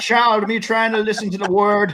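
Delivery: put-on Jamaican accent. Imitating a comedy sketch a co-host was mixing into a voice: Shane Gillis Jamaican church sketch voice. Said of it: "a mix of Shane Gillis in the, uh, Jamaican church sketch".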